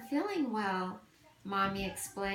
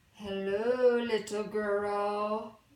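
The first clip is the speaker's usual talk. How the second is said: deep, rumbling, growly wolf voice; 4 dB louder than usual. Narrating a story, the wolf greets the little girl in the forest: deep, growly voice. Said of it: "said a deep, growly voice".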